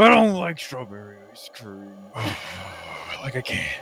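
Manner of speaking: put-on angry man voice, low and swooping. Speaker shows listeners a favorite voice game: angry Republican man voice. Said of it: "Think of like an angry Republican man voice".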